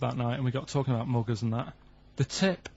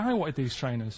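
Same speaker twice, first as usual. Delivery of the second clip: usual speaking voice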